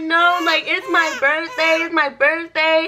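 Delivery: high, tearful, crying, begging plea. Retelling pleading with officers on a birthday: imitating own crying plea. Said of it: "I start crying".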